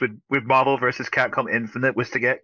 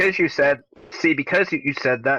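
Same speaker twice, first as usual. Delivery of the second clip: usual speaking voice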